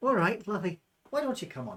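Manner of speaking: put-on loud, swooping Scottish accent. Second try voicing the woman in the scene, accent heard as Scottish. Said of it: "That's Scottish".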